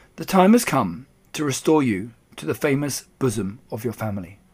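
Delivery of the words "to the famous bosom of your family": ordinary delivery, nothing marked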